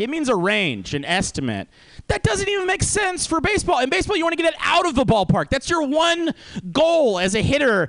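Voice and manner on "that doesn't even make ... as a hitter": raised, pitched-up shouting, ranting tone. Ranting about ballpark estimates: yelling. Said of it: "I'm yelling about ballpark estimates".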